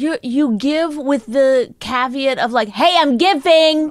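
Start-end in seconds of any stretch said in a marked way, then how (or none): 2.7-3.9 mock shouting, higher and louder. Imitating the other speaker's giving, mock yelling. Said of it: "don't yell".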